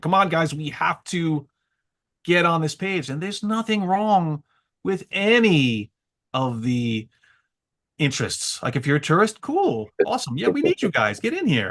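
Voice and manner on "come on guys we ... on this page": put-on yelling, higher. Retelling how they were yelling at people: imitating own yelling. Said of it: "yelling these things".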